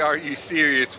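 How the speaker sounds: ordinary talk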